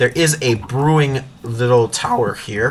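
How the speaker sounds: voice cracking and breaking mid-line. Narrating while exploring a village, voice cracking mid-sentence. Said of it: "Excuse me for the voice crack".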